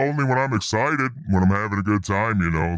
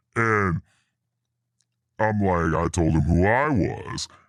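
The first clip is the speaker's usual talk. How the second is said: normal talking voice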